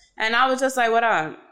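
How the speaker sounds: ordinary talk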